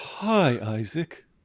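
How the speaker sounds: slow, calm, soothing, therapist-like voice. Imitating Abraham greeting Isaac: calm soothing Abraham voice. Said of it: "calm, soothing voice that sounds like a psychiatrist".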